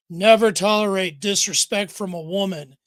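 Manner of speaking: stern, firm, no-nonsense tone. Telling the listener what could be said to them, in a stern tone. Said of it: "in a real stern tone of voice".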